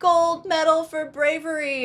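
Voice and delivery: very high-pitched put-on South African accent. Retelling what the laughing men said to him, in a South African accent. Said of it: "in their South African accents".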